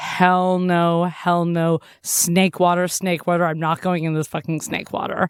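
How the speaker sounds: ordinary delivery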